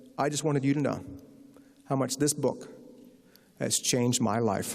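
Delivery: ordinary talk, nothing marked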